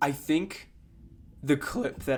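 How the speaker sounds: breaking voice, cracking in the middle of phrase. Talk about the clip that everyone saw, with your voice cracking. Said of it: "excuse my voice crack".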